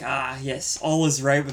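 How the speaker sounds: usual speaking voice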